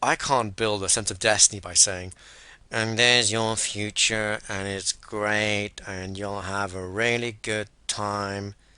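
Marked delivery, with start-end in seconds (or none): 2.7-8.5 dull, flat, slow, low-energy, lacking richness. Showing how not to describe a great future: flat, low-energy voice. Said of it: "My voice has none of the energy, none of the richness".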